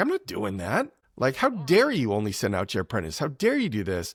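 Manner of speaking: super-ticked indignant outburst with swooping pitch. Retelling a Bible story, the speaker voices Naaman refusing the order: acting out Naaman's anger. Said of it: "he gets super ticked".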